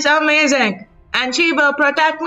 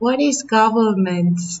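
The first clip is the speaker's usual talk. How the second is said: put-on hushed whisper, lower pitch; 5 semitones lower than usual. Voicing a child asking Cassandra a question: whispering in character. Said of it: "bends down and she's whispering to Cassandra".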